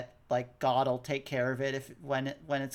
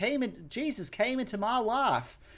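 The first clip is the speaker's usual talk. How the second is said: higher put-on accent drifting mid-line, stretched L's; 8 semitones higher than usual. Retelling a show character's line, imitating an inconsistent accent. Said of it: "she had an accent that was all over the place".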